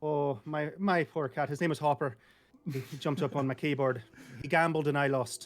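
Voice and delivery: put-on speaking in an Irish accent. Asked to tell what happened this past weekend in an Irish accent. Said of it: "tell us uh, what you did this past weekend in an Irish accent".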